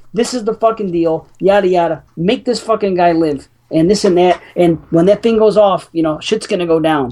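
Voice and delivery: plain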